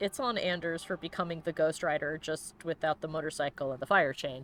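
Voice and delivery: plain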